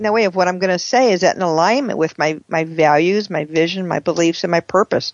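plain

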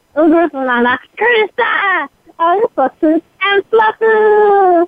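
put-on alien creature voice. Doing an impression after being put on the spot: Stitch voice. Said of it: "the only impression I can do is what is Stitch".

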